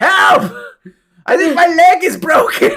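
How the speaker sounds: very high, pained, crying groan. Voicing someone behind a wall calling for help: groaning cry for help. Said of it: "a groan from behind the wall".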